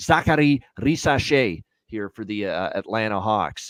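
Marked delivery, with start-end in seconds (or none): 0.0-1.6 word pronounced with a French accent. Naming the number one overall pick for the Atlanta Hawks in a French accent. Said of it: "in my French accent".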